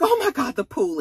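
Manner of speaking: put-on very high, alarmed shriek. Retelling the moment of realizing a child might be in the pool: retelling a scream. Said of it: "immediately I just screamed".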